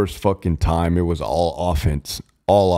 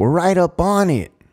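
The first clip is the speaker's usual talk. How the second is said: very high, squeaky little voice; 12 semitones higher, 3 dB louder than usual. Retelling asking the driver how close they were, speaker imitates Hill's squeaky voice. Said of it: "he kind of had a squeaky voice".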